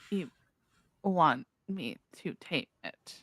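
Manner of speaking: casual, unruffled, unbothered. Answering an order to tame a beast, in character: nonchalant. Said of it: "Why do you sound so nonchalant?".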